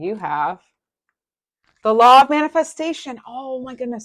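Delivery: thrilled, excited shout, high and swooping upward. Reading a card drawn for the listener in a card reading, excited yelling. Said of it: "sorry for yelling".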